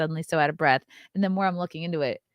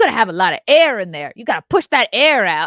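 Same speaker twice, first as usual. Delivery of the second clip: sassy put-on woman's voice, higher and louder; 6 semitones higher, 11 dB louder than usual. Retelling advice a woman in a clothing store gave: imitating a sassy woman.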